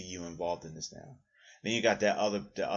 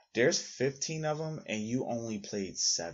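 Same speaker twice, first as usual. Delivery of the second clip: mock superior, condescending, talking-down tone; 3 semitones higher than usual. Retelling a conversation with a woman about games, imitating a condescending tone. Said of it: "she very condescendingly goes".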